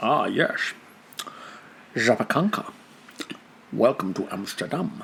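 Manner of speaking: put-on near-whispered, hushed, low Scottish accent. Natalia is making a Russian cheesecake, and you say her Russian word in a Sean Connery voice. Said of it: "that Sean Connery needs to say them".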